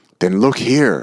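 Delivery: eager, excited exclamation. Narrator reads a character urging another to look, excited cry. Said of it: "Cried Homnith excitedly".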